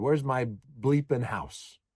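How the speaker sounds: imitated very loud voice. Retelling what a man from next door said to him, imitating a very loud voice. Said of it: "in a very loud voice".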